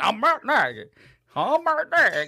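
put-on high-pitched, slow Cajun accent. Imitating a coach talking about one more year: Cajun accent imitating Matt Nagy. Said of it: "why he's Cajun all of a sudden".

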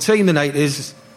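normal talking voice

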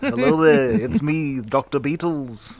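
slow, mock Liverpool accent.

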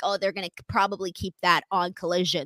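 ordinary talk, nothing marked

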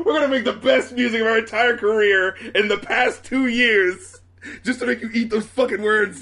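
mock rant with laughter. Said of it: "It's like".

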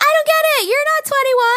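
play-acted shrill, loud yell, pitched way up. Speaker retells confronting a kid who isn't 21, retelling a yell. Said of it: "So I'm like yelling".

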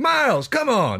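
shrill, very high, loud yell. Retelling an old recording where a guy yells at someone asleep: imitating someone yelling. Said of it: "And the guy yells at him".

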